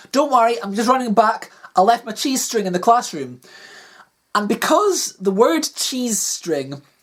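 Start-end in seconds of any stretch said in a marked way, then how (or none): none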